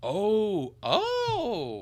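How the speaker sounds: high, loud, excited outburst.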